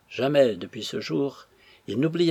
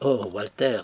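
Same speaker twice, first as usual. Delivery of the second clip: plain reading voice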